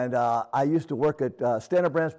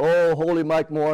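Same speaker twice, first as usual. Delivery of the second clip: mocking, taunting tone; 2 semitones higher, 4 dB louder than usual. Speaker retells bowing to someone and mocking him, retelling a mocking jab. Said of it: "and I started mocking him".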